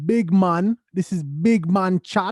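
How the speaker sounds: put-on Jamaican accent. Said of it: "That's a Jamaican accent".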